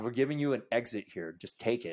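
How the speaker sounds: ordinary delivery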